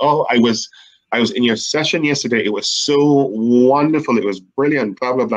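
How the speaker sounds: ordinary talk, nothing marked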